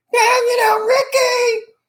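very high put-on sitcom-style falsetto. Describing how an actress spoke in a role: Lucille Ball falsetto Lucy voice. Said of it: "Lucille Ball used a falsetto voice when she worked as Lucy".

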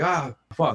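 frustrated scream. Recounting how she messed up a part, retelling a frustrated scream. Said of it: "she just screamed like".

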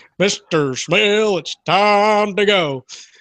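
very slow, drawn-out cowboy drawl. Announcing it's time to go near end of day, in a John Wayne impression. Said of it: "I tried my best John Wayne impression".

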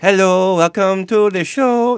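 bad French accent, high and loud. Opening a comic book news show, the host tries a new voice, Morning Jacques. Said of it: "That's not French".

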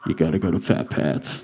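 hushed, secretive whisper. Retelling how a stranger came up and whispered advice: imitating a whisper. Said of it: "whisper in my ear and go".

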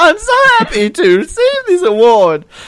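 put-on very high-pitched, squeaky teen voice. Speaker mocking an award winner's acceptance speech, Simpsons squeaky-voice guy impression. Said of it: "sounded like the squeaky, pimply voice guy from The Simpsons".

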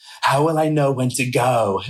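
excited, eager tone, ready to jump in. Retelling what Lisa asked about the booth: Lisa impression. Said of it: "That was a good impression".

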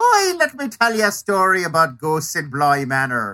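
put-on lilting, sing-song Irish accent. Imitating the narrator of a series, the speaker mimics her irish lilt. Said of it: "she is doing this Irish lilt".

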